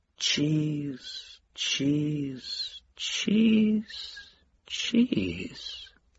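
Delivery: very slow whisper, trailing away to nothing. A narrator reads a man puzzling over a note, voice trailing off. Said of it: "His voice trailed off".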